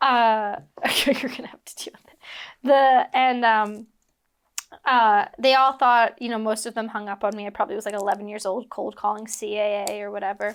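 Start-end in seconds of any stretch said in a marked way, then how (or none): 1.0-2.2 fast, sheepish whisper.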